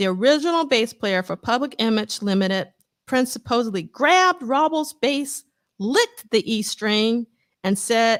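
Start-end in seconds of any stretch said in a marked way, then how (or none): none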